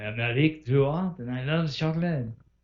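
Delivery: put-on French accent. Recalling a friend's interview bit as Eric Girard: imitating Eric Girard in French accent. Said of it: "in a French accent".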